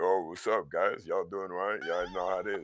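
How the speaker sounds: fake deep, soft voice. Former voice actor showing how he used to greet viewers live, put-on lower voice. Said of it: "I used to make my voice lower".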